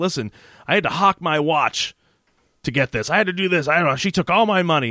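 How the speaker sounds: agitated, worked-up yelling rant. Retelling a scene where a character yells: imitating someone yelling. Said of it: "starts yelling at Cynthia".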